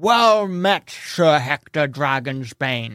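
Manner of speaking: orc voice, words pushed past big tusks. Voicing an orc greeting a stranger: orc talking through tusks. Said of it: "he talks through the tusks".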